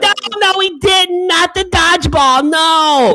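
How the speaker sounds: acted, very high, very slow, booming, shrill, drawn-out, loud. Retelling a date who talked through a movie: imitating a loud talker. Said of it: "And she's really loud".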